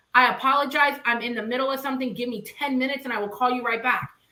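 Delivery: ordinary delivery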